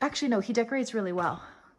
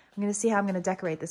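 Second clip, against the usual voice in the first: very fast, rushed, excited chatter. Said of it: "sorry, I'm talking so fast".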